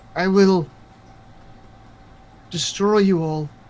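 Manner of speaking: echoing, disembodied voice, as if on wind. Voicing a voice echoing through the forest trees: echoing voice on the wind. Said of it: "a voice is almost carried on the wind".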